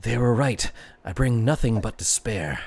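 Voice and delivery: hushed stage whisper. A game narrator voices a half-whisper heard inside a player's mind, half-whispering. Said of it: "and it whispers".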